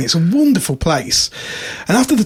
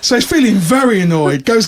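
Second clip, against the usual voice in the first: ordinary talk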